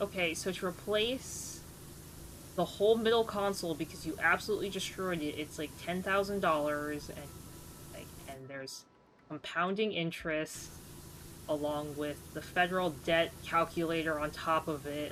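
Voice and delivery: ordinary talk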